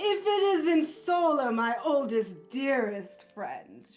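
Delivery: very smug, obnoxious jerk voice. Voicing a character greeting an old friend: douchiest voice possible. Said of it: "just in the douchiest voice possible".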